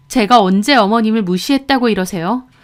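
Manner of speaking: ordinary delivery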